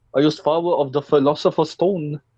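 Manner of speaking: clumsy fake German accent. Playing a character right after admitting he can't do the accent, bad German accent. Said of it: "I can't do a German accent".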